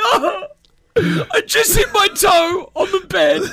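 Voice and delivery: very high, drawn-out, slow sobbing, crying whine. Mocking a guy who cries over everything, imitating him crying, whiny. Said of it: "he's crying like".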